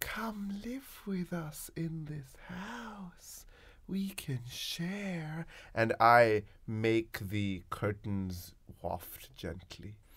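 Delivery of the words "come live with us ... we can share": high, hushed, whispered, coaxing boogeyman voice. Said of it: "I'm gonna say".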